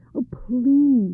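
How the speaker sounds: high, humble, imploring, begging tone. A servant asks the tutor for help, imploring. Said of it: "the servant implored".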